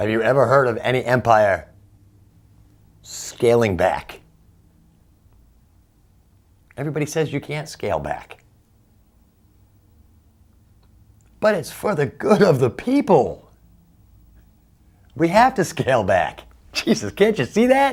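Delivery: agitated, building outburst with rising pitch. Making a point about empires to listeners, getting worked up. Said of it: "Sorry I'm getting so worked up".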